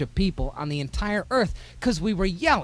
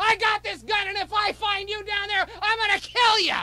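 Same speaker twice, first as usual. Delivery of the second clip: screamed, very high-pitched yelling. Retelling how dad threatened an intruder from the stairs: imitating dad yelling. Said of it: "Yelling and screaming".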